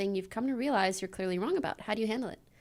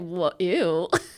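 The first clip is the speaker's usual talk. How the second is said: put-on judgmental tone, lower pitch; 4 semitones lower, 5 dB louder than usual. Retelling reacting to a jock's bullying, in a mock-judgmental tone. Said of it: "In the most judgmental tone you've ever heard".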